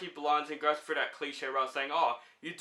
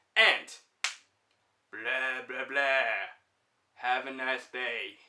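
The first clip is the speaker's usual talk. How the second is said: bad character voice, very slow and drawn out; 3 semitones lower than usual. Movie reviewer signing off to channel viewers, terrible Drax impression. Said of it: "my terrible Drax impression".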